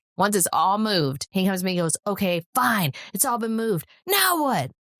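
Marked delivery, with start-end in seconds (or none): 2.1-4.8 mad, grudging, fed-up, angry, pitched high. Retelling a son's reply after moving his things: imitating someone angry. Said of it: "He's so mad".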